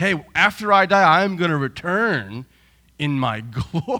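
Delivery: speech breaking into laughter. Speaker asks the church to picture him saying this, laughing while speaking. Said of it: "I can't even say it without laughing".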